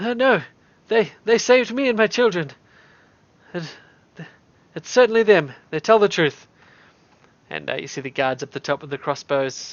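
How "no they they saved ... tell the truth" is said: raised, pitched-up shout calling up from below. The storyteller voices the lady the players saved, shouting from down below. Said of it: "you hear shouting from down below".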